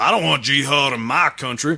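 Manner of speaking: rough, bad attempt at an Alabama accent. Reading out a quote, trying a southern us accent. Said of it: "I'll give it a shot at doing, like, Alabama".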